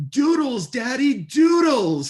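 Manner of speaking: put-on very high, loud little-kid toddler yell. A father retells his daughter calling to him on the beach, retelling her yell. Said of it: "she just yells".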